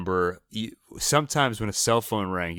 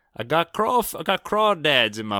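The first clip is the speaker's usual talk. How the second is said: put-on Louisiana accent, pitched up higher; 7 semitones higher, 4 dB louder than usual. Before their first live phone call, trying out a louisiana accent. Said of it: "I'll do a Louisiana accent".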